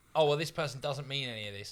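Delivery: ordinary talk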